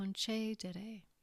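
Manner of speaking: concedere with stress on second syllable, ce. Grammar lesson on a third conjugation verb: stress on ce of concedere. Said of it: "The accent, as we said, is on the antepenultimate syllable".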